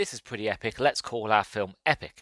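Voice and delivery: ordinary talk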